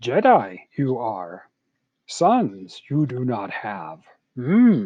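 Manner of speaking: slow, loud, deliberately poor delivery. Explaining word order by voicing Yoda speaking to Obi-Wan Kenobi; bad Yoda impression. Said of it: "Sorry for the bad Yoda impersonation".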